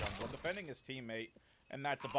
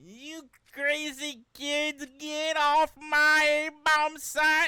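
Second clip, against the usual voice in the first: put-on botched old man voice, shrill, very high, booming; 14 semitones higher, 13 dB louder than usual. Voicing a character in a game, doing a bad old man impression. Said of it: "I can't do an old man impression".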